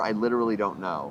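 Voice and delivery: plain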